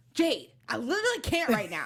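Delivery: snippy, swooping tone with attitude. Mocking a partner's reply on the phone: imitating an attitude. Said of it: "You got such a tone with me".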